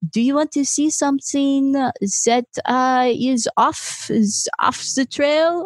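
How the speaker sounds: fake French accent. Retelling a man's offer on a cave tour, in a horrible French accent. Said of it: "This is a horrible French accent".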